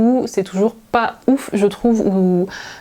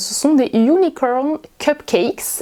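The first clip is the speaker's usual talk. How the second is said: deliberately forced, put-on American accent; 3 semitones higher than usual. Presenting cookies she bought to her viewers, in a forced American accent. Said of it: "Désolée pour l'accent, hein, mais euh, c'est forcé euh, exprès".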